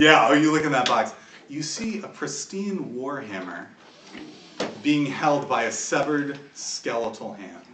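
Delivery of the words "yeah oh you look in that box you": usual speaking voice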